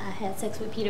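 hushed, very soft, low, guilty tone.

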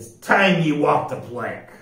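growled, menacing growl. The pirate captain, his face grown dark, growls at B. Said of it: "he growled".

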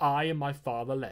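ordinary delivery, nothing marked

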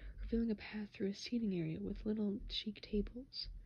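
ordinary delivery

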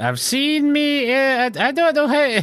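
put-on high, piping old-lady leprechaun voice. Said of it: "why do I sound like a leprechaun".

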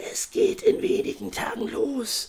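slow, hushed, drawn-out whisper. A voice speaks to a character, whispered. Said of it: "flüsterte die Stimme".

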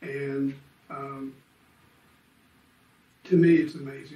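emotional delivery. Speaker tells a friend raised in an adoptive family what that meant, getting emotional. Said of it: "Now I'm getting emotional".

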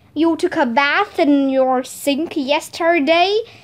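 usual speaking voice

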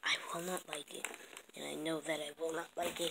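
soft, fast, sulky muttering.

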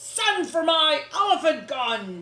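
very loud, high-pitched bellowing roar. Narrator reading Uncle Theodore's line as the presents go missing, roaring. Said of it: "roared Uncle Theodore".

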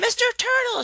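very high, shrill, delighted, excited squeal. Narrating a girl spotting a turtle on the path by a pond; squealing excitedly. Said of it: "she squealed".

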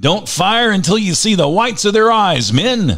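very high, loud, put-on commanding authoritative voice. Narrator retelling his own order to his men, in a put-on authoritative voice. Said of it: "I said in my best authoritative voice".

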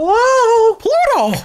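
squeaky, high and loud voice. Asked for a Mickey Mouse impression, the speaker obliges in a Mickey Mouse voice. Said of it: "You want my Mickey Mouse impression?".

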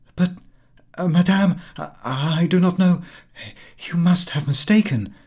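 high, startled, astonished, stumbling stammer. Reading a story, a friend greeted by a woman she doesn't recognize: stammering, astonished. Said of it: "and stammered".

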